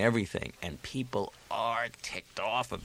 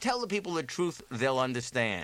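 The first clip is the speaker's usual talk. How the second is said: ordinary talk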